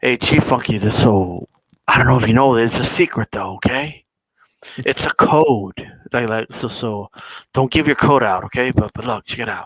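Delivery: mock conspiratorial whisper. Telling another speaker about a conspiracy theory: mock conspiratorial whisper. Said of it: "I gotta whisper this 'cause we're gonna talk about conspiracies".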